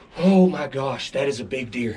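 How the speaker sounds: trembling voice. Talking to the camera right after shooting a big buck: shaking. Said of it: "I'm shaking".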